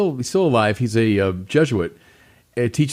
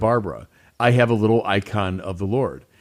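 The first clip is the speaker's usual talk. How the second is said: normal talking voice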